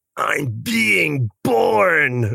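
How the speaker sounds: gross, rough, high, creaky goblin rasp, stretched out. Quoting a gross goblin emerging from the muck: gross goblin voice. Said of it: "gross goblin is, emerging, and he just goes".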